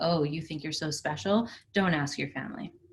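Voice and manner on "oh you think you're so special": ordinary delivery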